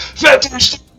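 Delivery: supportive roaring cheer. Voicing a crowd at a table cheering in support: roaring. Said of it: "everyone just around the table just roars in support".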